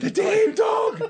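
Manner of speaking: sudden shriek, very high, loud and piercing. Retelling a night walk when a cousin suddenly screamed: imitating a scream. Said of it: "then she just screamed".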